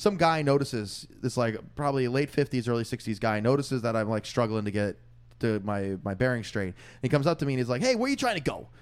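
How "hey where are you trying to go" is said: put-on New York Queens accent. Retelling a man on the trains coming up to ask where they're going, strong Queens accent. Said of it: "deepest Queens accent".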